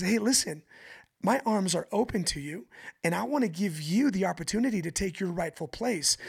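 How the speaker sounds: ordinary talk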